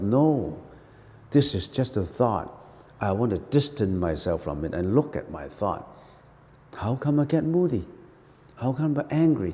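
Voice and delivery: low, hushed, whispered muttering. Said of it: "I whisper to myself".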